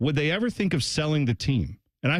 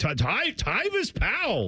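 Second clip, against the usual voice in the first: mock surprised voice, pitched higher; 7 semitones higher than usual. Retelling the call of the play: imitating surprised Paul Keels. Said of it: "hear the surprise in Paul Keel's voice".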